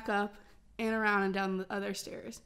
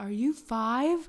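mock furious, loud, angry raised voice; 5 dB louder than usual. Retelling yelling at two guys recording a fight: imitating own yelling. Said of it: "I just remember yelling".

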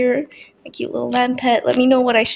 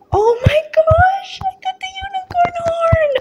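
very high, thrilled, excited shriek. Player opening chests and getting an ultra-rare item: screaming with excitement. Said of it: "I'm sorry guys if I'm screaming".

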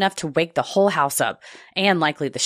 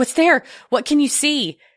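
put-on high-pitched, freaked-out, frightened, urgent tone; 9 semitones higher, 3 dB louder than usual. Retelling waking up to the boyfriend screaming: retelling a frightened question. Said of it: "I'm freaked out and immediately respond with".

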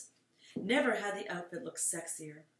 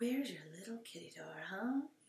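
hushed half-whisper under the breath; 7 dB quieter than usual. Alyssa searches around in the dark, half-whispering to herself. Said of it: "Alyssa whispered to herself".

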